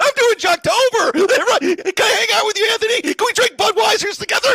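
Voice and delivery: very high, very loud, shrill mocking caricature. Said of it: "That's a pretty good impression".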